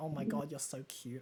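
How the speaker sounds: muttering under breath. Acting out the main girl's hidden remarks: muttering under her breath. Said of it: "but then under her breath, she's like".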